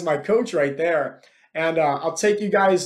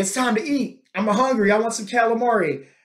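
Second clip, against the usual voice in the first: high-pitched yelling call, not at full force; 5 semitones higher than usual. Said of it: "He just starts yelling".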